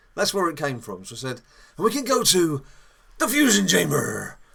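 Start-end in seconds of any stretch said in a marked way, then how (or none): 1.8-4.3 pretend pirate voice, higher and louder. Retelling how a card game joke started, in a put-on pirate voice. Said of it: "I put on a pirate's voice".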